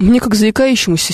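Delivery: ordinary delivery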